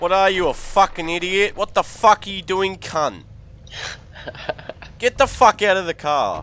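loud, shrill, enraged, furious rant. Role-playing a character fueled with rage after his job was stolen, enraged.

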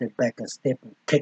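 plain reading voice

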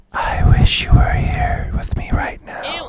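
character voice in a loud stage whisper. Voicing a character that Watson hears, whispered character voice. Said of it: "I need a whisper for this guy".

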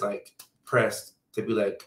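usual speaking voice

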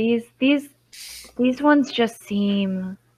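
wispy, breathy voice. A game master voices a character asked whether it is biased against guest pilgrims, wispy breathy voice. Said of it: "this kind of like wispy kind of breathy voice in your head".

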